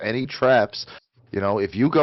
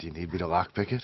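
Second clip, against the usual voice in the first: low, hushed, close half-whisper; 6 semitones lower, 9 dB quieter than usual. Player narrates coming up behind an ally and half-whispering in his metal ear. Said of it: "and I whisper in his metal ear".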